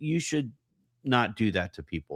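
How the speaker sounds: plain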